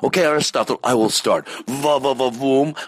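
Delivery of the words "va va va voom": put-on French accent. Starting a French accent dueling game against Aristotle, in a fake French accent. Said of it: "French accent dueling game".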